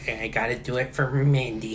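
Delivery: low voice, uneasy and scared yet determined. Imitating a wrestler who is scared-ish but protective. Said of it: "was that a good impression?".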